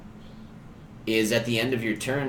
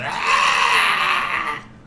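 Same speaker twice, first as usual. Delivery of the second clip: loud goblin-like scream. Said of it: "and he just screams".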